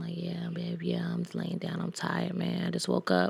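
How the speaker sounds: very quiet, low, hushed whisper. Retelling how he talked on the phone the next morning, imitating a low whisper. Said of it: "He whispering and shit like all on the phone".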